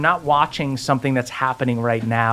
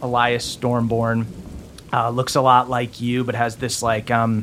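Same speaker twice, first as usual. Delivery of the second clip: ordinary talk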